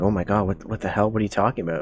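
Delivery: panicked voice. Storyteller voices people in the crowd reacting to the news, panicked. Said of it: "some people are starting to panic".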